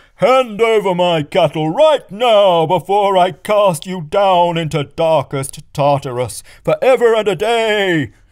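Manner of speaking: enraged, roaring, loud, high, furious bellow. Reading the story aloud, Apollo demands his cattle back from the child, bellowing. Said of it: "he bellowed".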